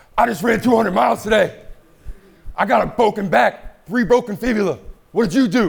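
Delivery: very high, loud, hard yell. Demonstrating what a runner does on camera: imitating David Goggins yelling. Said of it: "yelling at the camera".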